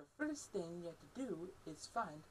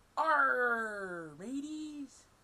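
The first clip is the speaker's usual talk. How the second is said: pirate voice, higher and louder; 6 semitones higher, 13 dB louder than usual. Showing everyone what pirates say while practicing being pirates: pirate voice. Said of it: "how about we can all practice being pirates?".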